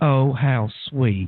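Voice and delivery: put-on sugary Southern accent, laid on sweet. Retelling how Beth reacted to the story: imitating Beth's sweet Southern accent. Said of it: "in the sweetest Southern accent ever".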